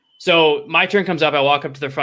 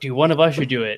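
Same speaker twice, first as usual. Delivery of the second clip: put-on whisper. Retelling a joke said quietly to a companion: retelling a whisper. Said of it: "I whisper to Mark".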